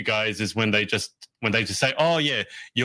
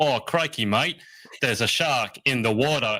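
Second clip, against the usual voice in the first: bad, clichéd, stock, put-on Australian accent. An Australian mocks how foreigners attempt the accent, in a mock Australian accent. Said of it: "all try to do Australian accents".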